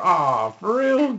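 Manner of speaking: grossed-out disbelief.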